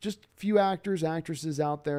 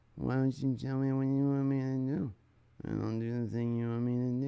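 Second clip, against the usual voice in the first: put-on flat monotone voice; 3 semitones lower, 4 dB quieter than usual. Mocking an actor's delivery he can't take seriously: imitating Gosling's monotone. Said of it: "Everything comes out in that monotone".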